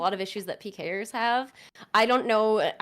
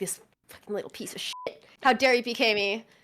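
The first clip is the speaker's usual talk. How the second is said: mock annoyed, salty, angry gamer outburst; 3 semitones higher than usual. Describing getting player-killed in a game, the speaker acts out a mock-angry salty outburst. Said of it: "I get salty sometimes".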